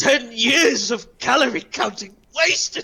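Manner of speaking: very high, genuine pleading tone. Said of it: "he adopts a real pleading tone".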